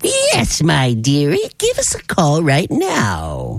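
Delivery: drawn-out, sing-song storybook witch voice. Radio host inviting listeners to call in for concert tickets, in a witch voice. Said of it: "that was a very good witch".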